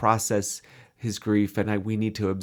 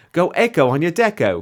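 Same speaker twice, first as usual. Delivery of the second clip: deliberately terrible put-on New Zealand accent, loud and high; 8 semitones higher, 7 dB louder than usual. Reading out a made-up slogan for a floor polish: very bad New Zealand accent. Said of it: "a very bad, uh, New Zealand accent".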